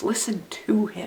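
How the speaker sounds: whispered, with stress on to.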